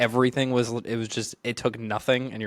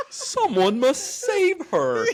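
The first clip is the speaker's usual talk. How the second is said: cartoonish anime-style hero voice, higher pitch; 14 semitones higher than usual. Imitating a voice actor who sounded very cartoony: cartoony anime-style voice. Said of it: "reminds me of an anime character".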